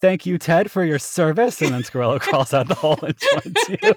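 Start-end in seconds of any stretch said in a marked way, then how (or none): 0.0-1.6 loud, hearty, high-pitched bellowing. Narrating a scene and voicing Squirrello, bellowing. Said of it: "Squirrello bellowing".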